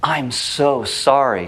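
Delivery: genuine, sincere, earnest tone. Explaining tone of voice to an audience, demonstrate a sincere apology. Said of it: "and it's sincere".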